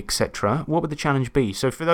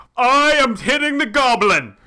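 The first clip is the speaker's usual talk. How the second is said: very high, loud, slow, drawn-out anchorman voice; 12 semitones higher, 6 dB louder than usual. Showing how to assert dominance at the table: Will Ferrell Anchorman voice. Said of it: "talk like Will Ferrell from Anchorman".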